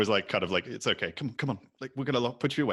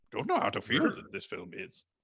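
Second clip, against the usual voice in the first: attempted wise alien master character voice. Speaker tries again after a co-speaker asks about it, Yoda impression. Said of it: "my attempt at a Yoda impression".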